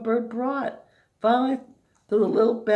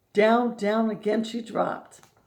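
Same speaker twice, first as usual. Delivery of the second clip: ordinary delivery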